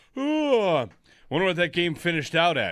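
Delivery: bored, uninterested, offhand musing, barely caring. Speaker does an impression of uninvested East Coast viewers: mock-uninterested East Coast viewer. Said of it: "this is my impression of everyone in America on the East Coast that is not all that invested".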